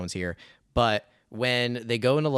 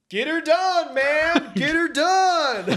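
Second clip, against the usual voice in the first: very high, loud, stretched rural holler; 7 dB louder than usual. Recounting a scene to friends, retelling John Travolta yelling. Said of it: "is yelling".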